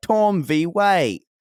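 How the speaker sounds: put-on slow, high, drawn-out British accent. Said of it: "we did the British accents for it".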